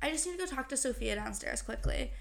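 usual speaking voice

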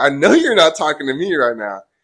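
loud, shouted, yelled delivery. Retelling yelling back at people below: imitating own past yell. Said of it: "I yelled back".

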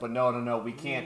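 ordinary delivery

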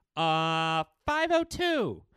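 high, loud, dopey, clueless-sounding tone.

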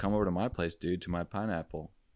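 ordinary delivery

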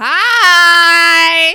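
very loud, shrill, long drawn-out high belting. Showing how Jill Zarin said hi when she came in, a loud Jill Zarin hi. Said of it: "I know that was really loud".

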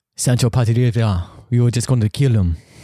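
put-on Spanish accent. Mid-conversation, the speaker slips into a spanish accent. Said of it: "What accent is that?".

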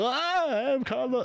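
very high, grating, annoying comic voice. Recalling the comedian's commercials, imitating Carlos Mencia's annoying voice. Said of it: "his annoying voice".

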